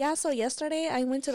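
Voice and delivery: put-on high, full Spanish accent. Imitating a friend who speaks English with a new accent: imitating a friend's put-on accent in English. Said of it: "she got a whole accent".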